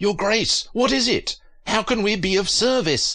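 very high, urgent, pressing tone. A housekeeper answers the king's scream, asking urgently. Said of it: "a housekeeper asked urgently".

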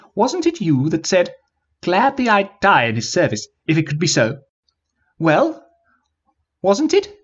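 squeaky, swooping, pleading wizard-like voice. Narrator reading the wizard's appeal to Raburn: squeaking. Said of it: "He squeaked".

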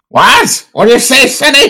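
put-on squeaky, very high, tiny old man voice. Told they sound like a tiny old man, the speaker plays along, little old man voice. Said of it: "You are such like a tiny old man".

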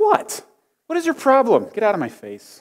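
put-on irritated tone. Playing out a mean reply before promising to be meaner, mock-annoyed retort. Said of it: "I'm gonna be meaner".

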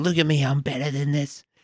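high-pitched, worked-up screaming outburst. Retelling how someone stomped on a sled: imitating someone screaming. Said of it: "he's screaming".

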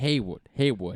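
mock Boston pronunciation. Repeating a player's name the way a Bostonian would, Boston accent. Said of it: "I'm trying to say it like a Bostonian".

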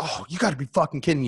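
very high, angry, fed-up, exasperated outburst. Acting out someone who just spilled coffee on themselves: acting out being angry. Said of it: "you're all mad and you're all angry".

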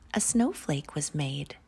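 ordinary delivery

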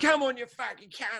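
aggressive bloke voice. Describing a confrontation outside in a car park, imitating an aggressive pub bloke. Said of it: "the pub scene would be where you deal".

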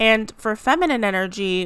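plain

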